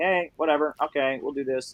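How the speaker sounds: mock relaxed, easygoing, laid-back, indifferent tone. Retelling how an actor acted offstage, imitating a chill, laid-back guy. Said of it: "he was just the most chill, laid back".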